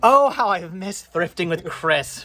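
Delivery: pointed, dripping, heavily laid-on sarcasm. Out thrifting together, an aside about missing thrifting, sarcastic. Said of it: "Please note the sarcasm in my voice".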